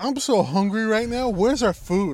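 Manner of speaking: put-on woman's yelling. Retelling what a woman said after being told she was yelling, imitating her yelling. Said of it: "yeah, you are yelling".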